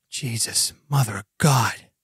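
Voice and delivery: muttered quietly under the breath. A game narrator voicing an agent who recoils at a body, muttered under his breath. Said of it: "says under his breath".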